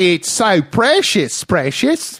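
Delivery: slow, drawn-out fantasy creature voice. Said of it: "I'll do a Schmiegel impression".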